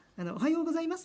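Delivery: high-pitched, cute voice with rising ending. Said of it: "語尾がこう、上に上がるんだよね".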